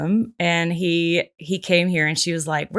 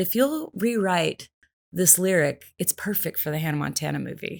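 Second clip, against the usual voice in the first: put-on British English accent; 4 dB quieter than usual. Quoting what a caller said to her on the phone, british accent. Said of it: "he's British voice".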